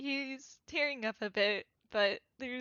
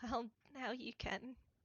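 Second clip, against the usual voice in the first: acted, soft, hushed stage half-whisper; 9 dB quieter than usual. Voicing Camille in a hug, answering a wish to be held: half-whispering in character. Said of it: "Camille kinda just whispers".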